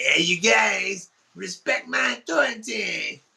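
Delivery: high, slow, drawn-out, scratchy cartoon voice. Retelling how a girlfriend talked: Cartman voice. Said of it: "she would do the Cartman voice".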